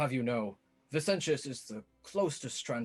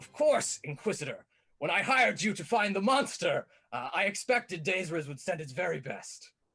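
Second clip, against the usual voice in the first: raised character voice, laughing through the words; 7 semitones higher, 4 dB louder than usual. Voicing Vicentius mid-duel, laughing while dueling: Vicentius voice, laughing. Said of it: "then he just says".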